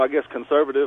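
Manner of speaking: ordinary talk, nothing marked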